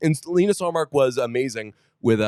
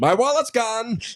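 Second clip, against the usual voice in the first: very high-pitched, squeaky put-on character voice; 11 semitones higher than usual. Telling about a lost wallet, the speaker uses a Morty Seinfeld voice. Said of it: "Morty Seinfeld voice".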